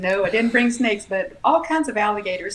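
ordinary delivery

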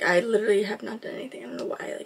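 out of breath.

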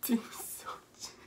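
slow, soft whispering.

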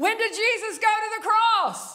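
play-acted, loud, very high-pitched shout. Retelling yelling a question at Grandma: retelling a yell. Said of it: "I don't need a microphone".

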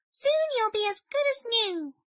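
very high, chirpy, much too cheerful voice. Narrator reading Mouse's words to Bear, who has a terrible cold, cheerful Mouse voice.

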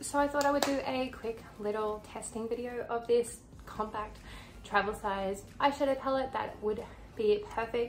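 out of breath, wound up, hyper chatter. Presenter introducing a quick test video of a travel eyeshadow palette, out of breath. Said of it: "I'm out of breath".

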